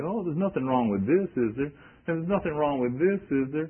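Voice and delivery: mock-whining voice. Mimicking people who want to hang on to things, in a put-on whining voice. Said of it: "you hear them in whining voice say".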